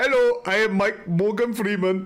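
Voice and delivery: put-on Indian accent gradually creeping in. Showing the other speaker a Morgan Freeman impression: Morgan Freeman impression sounding Indian. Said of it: "My Morgan Freeman sounds a little bit too Indian".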